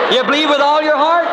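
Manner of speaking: high, ringing, exultant cry.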